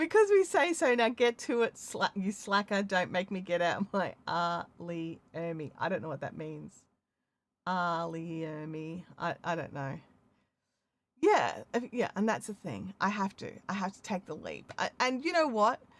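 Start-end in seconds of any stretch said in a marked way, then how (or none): none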